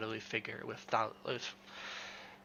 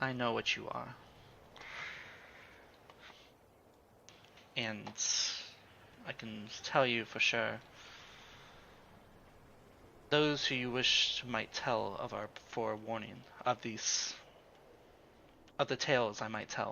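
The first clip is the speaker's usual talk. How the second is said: soft-spoken, gentle, hushed delivery; 5 dB quieter than usual. A character who just flicked the listener's forehead speaks to them; softly. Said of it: "And she says to you softly".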